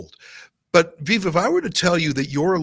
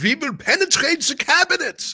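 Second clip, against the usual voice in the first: put-on German accent, very high-pitched; 11 semitones higher than usual. Quoting a W E F board member's boast, Klaus Schwab German accent. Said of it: "I'm saying that in a German accent".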